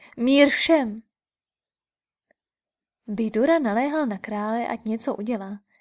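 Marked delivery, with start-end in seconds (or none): 0.2-1.0 anxious cry, higher pitch. Two men cry out as ill omens sound around them, crying out in anxiety. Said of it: "Bhíšma a Drona úzkostí vykřikli".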